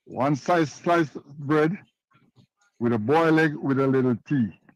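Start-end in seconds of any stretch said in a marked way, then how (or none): none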